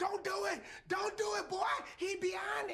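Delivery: very high, shrieking scream. Joking about a woman in a movie theater, imitating a woman screaming.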